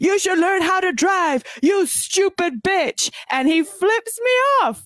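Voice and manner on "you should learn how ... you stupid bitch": play-acted loud shouting. Retelling a man yelling at the speaker through the car window: retelling a yell. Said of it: "he yells at me".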